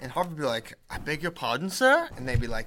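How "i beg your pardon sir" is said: put-on posh accent. Acting out how Harvard would reply when someone's guy showed up, Grey Poupon guy voice. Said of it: "They all talk like the Grey Poupon guy".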